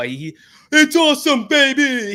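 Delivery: very high-pitched sports announcer call. Mocking the same few lines a commentator said over and over, with a Dickie V impression. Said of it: "He would do that".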